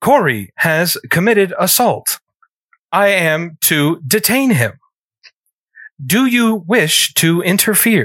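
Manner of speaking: flat, emotionless, monotone robot voice. Playing a robot in the game, addressing Rachel in an emotionless robot voice. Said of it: "with no emotion because i'm a robot".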